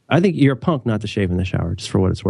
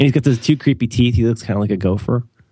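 plain

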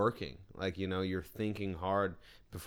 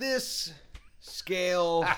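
very high, loud show-host announcer voice; 10 semitones higher, 5 dB louder than usual. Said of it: "Are you doing my voice?".

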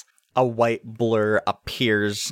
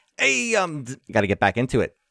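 put-on New York accent character voice; 3 semitones higher than usual. Voicing Arkia wheeling around to face two characters: put-on New York accent. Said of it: "I've got all of the Brennan Lee Mulligan New York accents".

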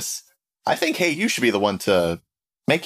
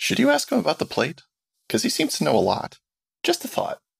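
stage whisper, pitched a touch high; 7 semitones higher than usual. In a role-play, Dilly goes to Nyx and whispers a question, whispering. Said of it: "Dilly goes to Nyx and whispers".

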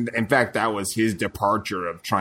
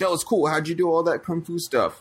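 very high, laugh-filled chatter; 10 semitones higher than usual. Retelling what a cameo character in a movie said: imitating someone laughing while talking. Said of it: "laughing and saying".

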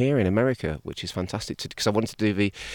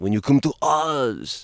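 put-on French accent with oz stretched long; 5 semitones higher than usual. Speaker quotes a french priest who kept going around saying this, french accent. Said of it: "it's my French accent".

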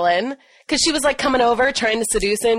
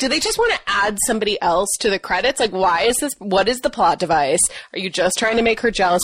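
ordinary delivery

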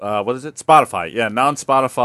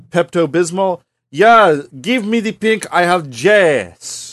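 put-on Italian accent in English, higher pitch; 7 semitones higher, 4 dB louder than usual. Voicing an Italian speaker learning English, for a joke: Italian speaker's English accent. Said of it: "who speaks Italian is learning, uh, how to speak English".

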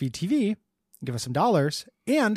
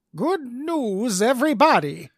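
higher pitch, stretched out; 6 semitones higher, 3 dB louder than usual. Finally landing an impression after many tries, in a Professor Farnsworth voice. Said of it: "You got it".

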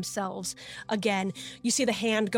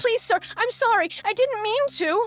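put-on very high, loud, childlike panic, near tears; 14 semitones higher, 7 dB louder than usual. An adult voicing a child who is addressing a sir, panicked, almost crying. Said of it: "in a very panicked, almost crying kind of voice".

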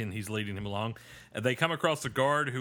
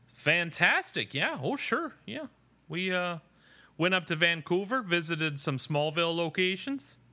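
high-pitched mock Canadian accent. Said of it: "in that accent".

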